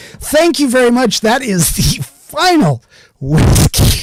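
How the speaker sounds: chuckling through each word, sing-song, drawn out. Closing with a joke quote, laughing while talking. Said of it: "I'm cracking myself up".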